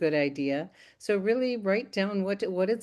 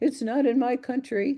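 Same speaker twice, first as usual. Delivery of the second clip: mock sulky, hard-done-by grumble; 4 semitones higher than usual. Imitating someone who complains instead of acting: imitating a pouty complaint. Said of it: "and being pouty".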